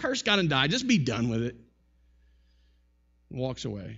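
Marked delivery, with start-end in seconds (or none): none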